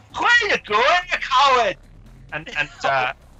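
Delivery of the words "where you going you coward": put-on Scottish accent, much higher, louder. Narrating a game, voicing the dwarven captain calling after a fleeing figure, in a Scottish accent. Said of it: "how I speak in a Scottish accent?".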